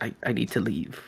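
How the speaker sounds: very quiet, low half-whisper under the breath. Voicing a frightened character muttering under his breath: half-whispering to himself. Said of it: "He is whispering to himself".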